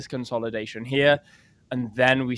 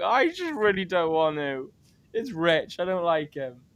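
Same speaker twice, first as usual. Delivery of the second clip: acted, high, weepy, tearful crying voice; 5 semitones higher than usual. Retelling crying on the phone today: imitating own past crying. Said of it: "crying on the phone to Cece today".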